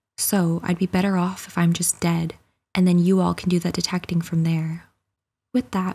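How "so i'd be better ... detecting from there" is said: ordinary talk, nothing marked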